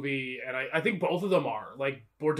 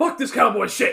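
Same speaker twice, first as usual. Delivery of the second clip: put-on screaming villain voice, higher and louder; 9 semitones higher, 9 dB louder than usual. Retelling a movie scene, imitating Billy Zane screaming. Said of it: "this performance".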